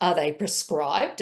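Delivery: quite perplexed, puzzled querying tone. Retelling a question the board asked: imitating a quite perplexed voice. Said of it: "in a quite perplexed voice".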